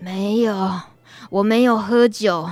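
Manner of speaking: put-on feeble, listless, limp voice. Telling a joke, answering the angry theater owner as the lying man: imitating a feeble, listless voice. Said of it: "有气没力的说".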